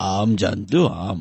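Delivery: put-on elderly grandfather voice.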